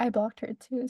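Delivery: normal talking voice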